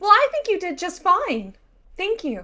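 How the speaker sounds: put-on very high, animated, swooping kids-TV voice. Voicing a character who yells out to another rider: Disney Channel voice. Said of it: "Disney Channel ass voice".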